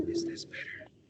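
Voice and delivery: hushed, toned-down, soft, high whisper. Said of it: "you should do the whole show like that".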